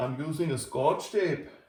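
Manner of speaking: put-on Scottish accent. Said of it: "my Scotch accent isn't up to snuff".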